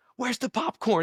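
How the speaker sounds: put-on panicky outburst, high and frantic, losing it completely. Retelling a theater worker's outburst about missing popcorn: imitating someone freaking out. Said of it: "And he's freaking out".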